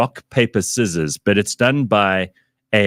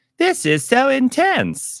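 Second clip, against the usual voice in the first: very high, very slow, silly voiceover voice. Describing a viral video's narration: imitating a stupid video voiceover. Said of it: "that stupid voice that they use for all those videos".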